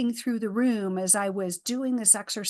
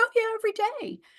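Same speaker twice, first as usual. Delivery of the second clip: play-acted, very high, astonished tone; 13 semitones higher than usual. Retelling the mom's answer about drinking while pregnant: imitating a surprised reply. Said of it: "With such surprise".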